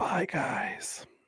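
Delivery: whispered softly. Saying goodbye to listeners at the end of the show, whispering. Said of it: "Why are you whispering?".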